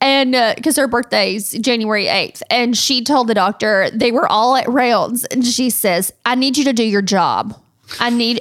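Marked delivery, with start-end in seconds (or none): 6.2-8.4 put-on serious delivery, higher pitch. Retelling a young child ordering a doctor: imitating a serious demand. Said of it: "she was serious. She pointed her finger".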